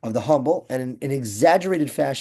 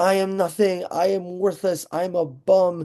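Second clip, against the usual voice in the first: put-on loud belting cry, higher pitch; 5 semitones higher than usual. Retelling a story of a newcomer copying the guy: imitating someone belting out. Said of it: "belts out in the beis medrash".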